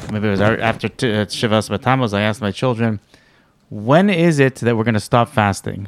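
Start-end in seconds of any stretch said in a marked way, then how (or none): none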